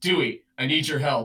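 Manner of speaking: dead-serious, solemn tone. Retelling a friend asking for help at a convention: imitating Locke's very serious tone. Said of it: "with a very serious tone and was like".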